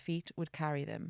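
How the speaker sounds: ordinary delivery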